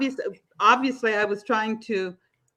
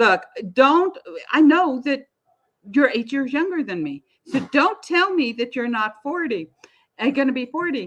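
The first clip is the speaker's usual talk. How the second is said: put-on insistent, worked-up, heated argumentative tone; 3 semitones higher than usual. Retelling arguing with a man about his age: retelling angry yelling. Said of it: "I am like yelling and screaming at Marty".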